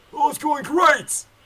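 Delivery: very loud, shrill, high-pitched shout in a put-on voice. Answering another character's greeting in character, yelling in character. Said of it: "Why are you yelling at me?".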